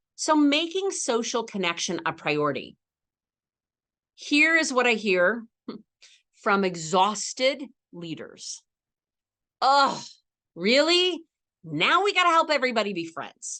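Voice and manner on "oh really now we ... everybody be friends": high, fed-up, sarcastic exasperation with humor showing. Voicing the reply heard from exhausted leaders: mock-exasperated sarcastic tone. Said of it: "catch the humor in my voice".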